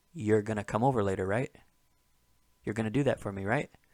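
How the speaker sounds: fast, relaxed, casual, rattled-off everyday talk. Showing an example of how people say you're when talking quickly. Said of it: "especially true when people are talking quickly".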